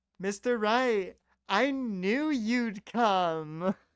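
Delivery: put-on very slow Valley Girl accent, stretching out "come". Trying a character's line as Broken Matt Hardy: Broken Matt Hardy voice in Valley Girl accent. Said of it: "Valley Girl-esque accent as Broken Matt Hardy".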